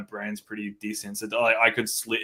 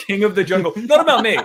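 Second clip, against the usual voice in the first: very high, loud hollered yell; 11 semitones higher, 10 dB louder than usual. Retelling a fan at the gig: imitating someone yelling. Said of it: "and yells".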